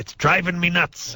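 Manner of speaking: squeaky, very high put-on pirate voice. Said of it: "the pirate voice is nicer".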